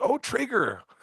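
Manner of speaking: put-on very high, goofy, dorky Canadian accent. Retelling meeting Trigger, repeating own words: imitating own dorky Canadian accent. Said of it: "my dorky ass Canadian accent".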